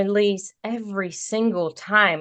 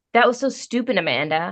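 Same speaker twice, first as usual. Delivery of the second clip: plain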